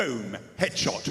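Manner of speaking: put-on Australian accent. Recalling the listener's Australian character from a game, in an Australian accent. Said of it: "You were an Australian with the jar of Wii".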